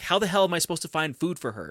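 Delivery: exasperated, frustrated, high-pitched yelling outburst. Recounting a scene of frustration, the speaker is retelling a yell. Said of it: "he just yells like".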